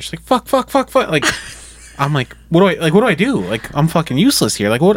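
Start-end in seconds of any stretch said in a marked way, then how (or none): 0.2-1.1 mock pained screaming, much higher and louder. Retelling the moment she had gas pains in the hospital bed, imitating her screams of pain. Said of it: "She's like screaming and how much pain she's in".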